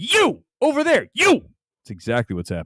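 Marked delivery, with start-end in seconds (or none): 0.0-1.4 very high, slow, drawn-out, enraged furious yelling. Imitating a man ranting at his crew: imitating someone yelling angrily. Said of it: "He's like Les Grossman".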